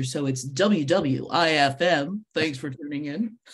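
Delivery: very slow, on-air radio announcer delivery. Answering a question about a radio station's call letters, saying them like a radio announcer. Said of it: "you have to say it like a radio announcer".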